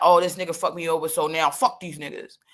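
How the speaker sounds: put-on mean, hard, bitter tone. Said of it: "Let me be mean and hard".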